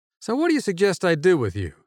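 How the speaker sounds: composed, even-tempered. The narrator questions Bob, a cornered victim; calm. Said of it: "I asked calmly".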